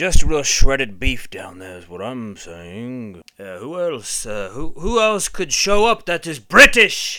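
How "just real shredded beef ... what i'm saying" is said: put-on swashbuckling pirate character voice. Doing British characters in turn, as Captain Jack Sparrow: Captain Jack Sparrow voice. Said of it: "Captain Jack Sparrow".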